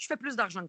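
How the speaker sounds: normal talking voice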